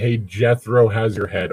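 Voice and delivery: ordinary talk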